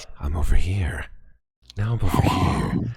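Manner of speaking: close-mic ASMR murmur, low and hushed. Mocking ASMR streamers to the others, ASMR streamer impression. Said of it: "those A S M R streamers".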